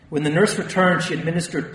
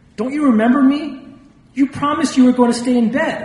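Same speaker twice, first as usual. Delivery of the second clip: very high, loud, acted incredulous cry; 10 semitones higher, 7 dB louder than usual. A doctor finds his patient out of bed despite her promise; incredulous.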